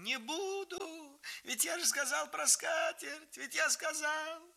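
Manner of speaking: nasty, piercing, thin, very high shrill squeal. A brother being whipped by the grandfather, shrieking thinly. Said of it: "Саша визжал страшно тонко, противно".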